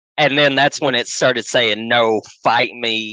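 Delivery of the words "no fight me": put-on gruff Southern male voice, much slower. Retelling what came across the box, in a gruff Southern male voice. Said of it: "in a very gruff Southern".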